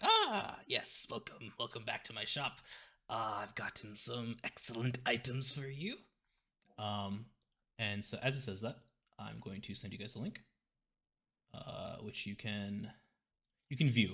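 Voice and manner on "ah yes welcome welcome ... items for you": put-on old-man voice with swooping pitch. Game master voicing Balvo welcoming the players back to his shop, old man voice. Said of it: "hunched, old, old kind of skinny man".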